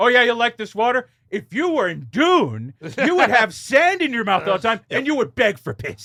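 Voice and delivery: put-on stern father voice. Joking about what a stern father would say: mock stern father voice. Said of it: "a stern father to be like".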